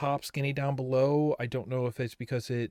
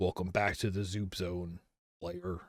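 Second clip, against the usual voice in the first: low, eerie, creepy, evil-sounding voice; 6 semitones lower, 6 dB quieter than usual. Reading a game screen's welcome line aloud, in a creepy voice. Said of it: "Now you get the creepy voice".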